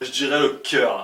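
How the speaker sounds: Marseille French accent. Redoing a word for a listener from Marseille, put on a Marseille accent. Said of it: "faut que je le fasse avec l'accent de Marseille".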